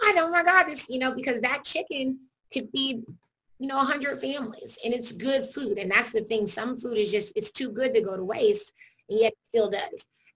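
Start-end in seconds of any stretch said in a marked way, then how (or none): 0.0-0.9 high-pitched, startled, aghast, shocked scream. Retelling a reaction to chicken being thrown away: imitating a scream.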